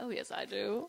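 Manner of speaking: mock, very smug, self-satisfied tone. Retelling how another person answered the question put to them both, retelling a smug reply. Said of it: "very smugly".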